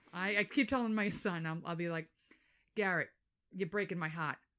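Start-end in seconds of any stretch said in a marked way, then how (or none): 2.7-4.3 put-on thick, laid-on Boston accent, heart said as hot. Retelling what was said to a son, boston accent. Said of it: "I'm bringing Boston back".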